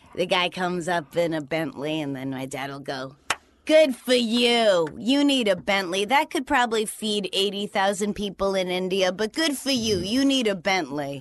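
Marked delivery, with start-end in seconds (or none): 3.7-11.3 put-on New Hampshire accent. Quoting a father mocking a man in a Bentley: imitating dad's New Hampshire accent. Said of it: "that's your New Hampshire accent".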